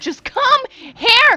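high, loud, drawn-out yell.

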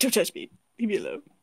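very low, agitated put-on animal voice. Voicing a costumed pet's thoughts, agitated: voicing an agitated pet. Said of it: "He's like".

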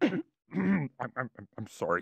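fake emotional stammer. Pranking a radio doctor as a caller, faking being emotional. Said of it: "This is very emotional".

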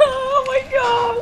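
terrified, high, laughing shriek.

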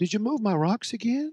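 gentle, sugary, very sweet, nice tone. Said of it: "I said it in a very sweet".

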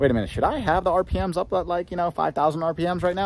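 high-pitched, puzzled, thinking aloud.

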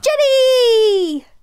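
excited cheer, high pitched and loud.

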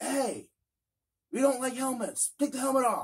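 high, barked, mock yelled shout. Retelling how an employee called out from far away: imitating an employee shouting. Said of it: "One of the Walmart employees shouts at me".

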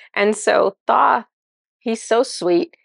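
normal talking voice

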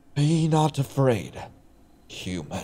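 slow, soft, drawn-out, theatrical, dramatic delivery. A strange voice suddenly rings in someone's head, slow and dramatic. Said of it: "that was way too slow and dramatic".

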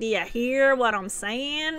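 put-on thick Texas accent, soft and low-key. Retelling a man's reply in their conversation, in a strong Texas accent. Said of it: "he said it in a really strong like Texas accent".

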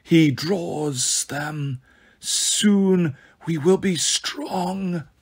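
snake-like, reptilian monster voice. A second slithering creature speaking past the restroom door, in a reptilian voice. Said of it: "a 2nd reptilian voice said".

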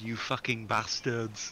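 put-on German accent. Quoting what he just said during the game, in a German accent. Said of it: "In a German accent".

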